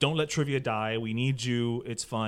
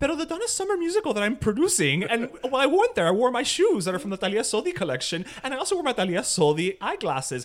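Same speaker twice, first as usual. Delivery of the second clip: rapid nonstop one-breath run, very high and loud; 10 semitones higher, 5 dB louder than usual. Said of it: "my impression of [name]".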